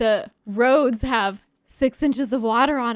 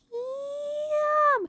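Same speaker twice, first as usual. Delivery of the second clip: very high, soft, hushed, drawn-out calling voice; 5 dB quieter than usual. Doing the pet's ham call, doing the call super quietly. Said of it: "I'm doing it super quietly".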